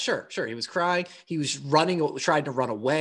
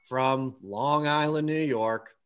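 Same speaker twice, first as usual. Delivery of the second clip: mock gloomy announcer voice, pitched lower; 3 semitones lower than usual. Retelling a ring announcer's introduction: imitating a depressing introduction. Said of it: "He did the most depressing introduction".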